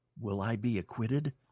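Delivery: very small, shrunken, tiny voice. Retelling his wife asking the psychic a question, imitating a very small voice. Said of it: "in this very small voice".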